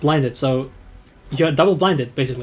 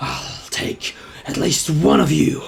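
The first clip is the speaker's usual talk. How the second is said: voice full of fury, rough and growled. Storyteller voices a beast whose pack was just demolished, with fury in his voice. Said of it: "with a fury in his voice".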